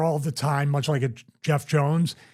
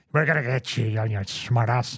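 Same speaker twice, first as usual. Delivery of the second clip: mumbled, browbeating, domineering voice; 3 semitones lower than usual. Imitating a wrestling manager's promo line: mumbled Mr. Fuji impression. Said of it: "You ever notice when Fuji would".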